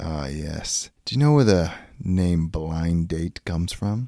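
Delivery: hard-boiled 1940s noir private eye voice. Playing a forties noir detective in an improv scene: 1940s noir detective. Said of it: "you are plucked from the forties noir detective".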